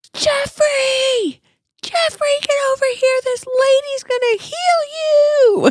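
very high, drawn-out yell with heal stretched. Retelling how a woman called across a supermarket: imitating a woman yelling. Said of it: "she yelled across the entire, um, supermarket".

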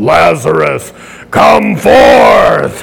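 big, deep superhero announcer-style microphone voice. Imitating him calling Lazarus forth into the microphone: deep microphone voice. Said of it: "Like he's a deep voice in the microphone".

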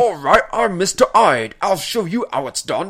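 put-on loud Cockney accent. Describing a movie's Mr. Hyde, quoting him in a Cockney accent. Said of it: "he now has a Cockney accent. He's like".

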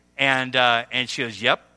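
ordinary talk

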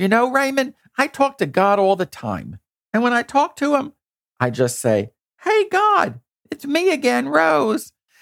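very high, swooping, light New York lilt. Quoting Rose, who has lived in the South for years: Rose's slight New York accent. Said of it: "she still has a little bit of a New York accent".

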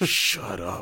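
said with real aggression. Retelling how a movie character silences someone: imitating an aggressive "shut up". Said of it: "he kinda says it, like, aggressively".

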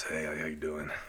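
over-the-top, exaggerated, deep, gruff manly voice. Showing how his own voice sounds, exaggerated gruff voice. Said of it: "I got this gruff voice".

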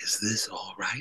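soft, wispy little voice. Recalling taking photos as Marilyn Monroe turned and asked something, in her wispy voice. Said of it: "I heard her say in this wispy voice".

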